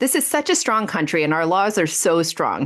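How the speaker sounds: usual speaking voice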